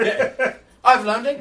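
put-on high, loud British accent. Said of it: "talking in some nice British accent".

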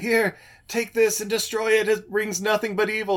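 high-pitched screaming delivery. Retelling a movie scene where a wounded girl hands over a stone, imitating someone screaming. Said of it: "screaming in Mandarin".

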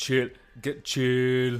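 throaty voice pushed to the back of the throat. Showing how Arnold Schwarzenegger sounds: Arnold Schwarzenegger voice, back of the throat. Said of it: "Arnold's more back of the throat".

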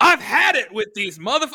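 imitated angry yelling. Retelling a line from a movie scene: imitating someone yelling. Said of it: "Why are we yelling now?".

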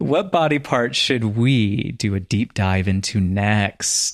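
suggestive delivery. Asking what body part to cover next: suggestive delivery. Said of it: "Did you have to say it that way?".

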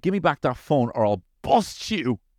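put-on furious little kid voice, acted. Retelling what a three-year-old said: imitating an angry child. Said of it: "He was so angry".

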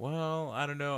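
indistinct, mumbling delivery. Retelling how the doctor answered the camera guy: imitating someone mumbling. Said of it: "she kinda just started mumbling".

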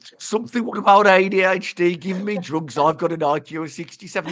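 put-on Brummie accent. Al is making you say something about adhd; say it in a birmingham accent. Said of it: "I love the Birmingham accent".

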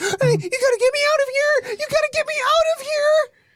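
very high, rushed, frantic panicked pig voice. Voicing a pet pig as a demon lunges: extremely panicked pig voice. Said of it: "The pig, it sounds extremely panicked".

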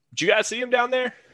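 very high, carrying shout. Playing a character on a rooftop, yelling down to companions: yelling from a rooftop. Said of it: "just kinda yell out".

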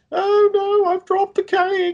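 very high, put-on tearful blubbering. Mimicking people on a show who just start crying, imitating someone crying. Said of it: "they just start fucking crying".

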